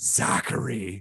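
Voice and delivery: put-on, totally disappointed, let-down parent-like tone. Retelling a streamer's reaction to a missed empty net: imitating Steve Dangle, totally disappointed. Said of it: "like someone talking to their child of, like, total disappointment".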